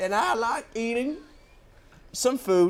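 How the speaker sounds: fake, put-on Texas accent, laid on thick. Playing a made-up T-Rex character from Texas, in a put-on Texas accent. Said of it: "there was my Texas one".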